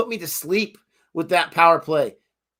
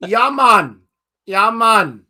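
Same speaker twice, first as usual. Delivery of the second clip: put-on Caribbean accent; 3 semitones higher, 5 dB louder than usual. Joking that accents just add stereotypical words, the speaker demonstrates: mock caribbean accent. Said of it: "You just add like the stereotypical words".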